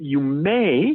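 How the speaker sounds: stress on "may". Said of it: "I emphasize the word may".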